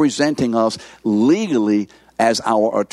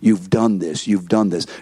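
put-on accusing voice, lower; 3 semitones lower than usual. Voicing the accuser on one's shoulder, pointing to failure: voicing the devil accusing. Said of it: "the one who is ever accusing and pointing to our failure".

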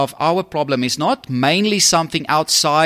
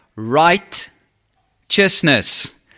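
deliberately slow, stretched syllable by syllable. Explaining what a word means, saying it slower: slow, drawn-out righteousness. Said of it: "I'm going to say it slower".

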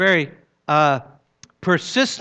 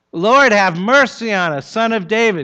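put-on insistent crying out, louder; 4 semitones higher, 5 dB louder than usual. Retelling the beggar's plea as the people try to hush him, crying out all the more. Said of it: "they cried out all the more".

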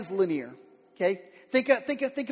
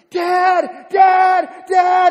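put-on very loud, high, crying little-kid wail; 8 semitones higher, 13 dB louder than usual. Retelling a lost kid in a maze, imitating a crying child. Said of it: "everybody in the maze hears this little kid crying".

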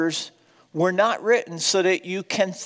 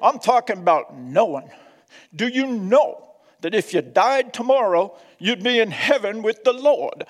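put-on strong North Carolina accent; 3 semitones higher than usual. Quoting a message a man gave, in his deep North Carolina accent. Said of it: "He said this in his deep North Carolina accent".

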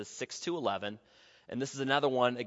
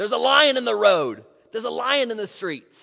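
shrill, very loud, high-pitched excited outcry; 11 semitones higher, 13 dB louder than usual. Speaker quoting the sluggard's excuse from Proverbs 26:13, said loudly. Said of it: "and I'll just say this loudly".

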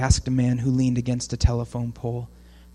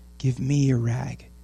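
soft, kind, gentle, tender. The ragman speaking to a weeping woman, gently. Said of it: "he said gently".

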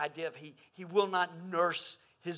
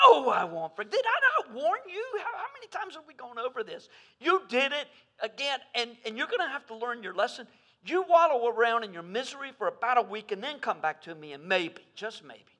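mock exasperated, reproachful, loud, swooping angry tone; 7 semitones higher, 6 dB louder than usual. Acting out God refusing to forgive after we ask: imitating an angry God. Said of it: "we sense him going".

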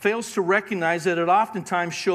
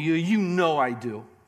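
mock-snarky tone, much slower. Retelling how a professing believer answered his question, mimicking a snarky reply. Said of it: "in a very snarky tone".

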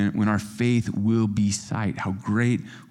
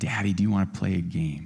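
put-on sweet, cute little child voice; 2 semitones lower, 4 dB quieter than usual. Father retelling his youngest coming to him one night, imitating a sweet, cute little voice. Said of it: "a sweet, cute little voice said".

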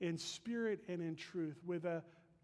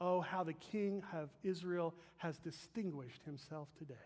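ordinary talk

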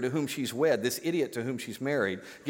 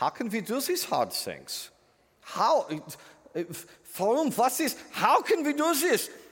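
very high, slow, put-on German accent; 10 semitones higher than usual. Voicing the listeners' imagined question: german air traffic controller voice. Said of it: "in your German air traffic controller voice".

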